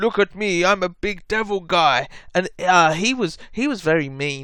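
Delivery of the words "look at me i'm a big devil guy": slow, puffed-up, boastful big devil voice. Retelling a visit from a tall horned guy: imitating a tall horned devil guy. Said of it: "and he was all like".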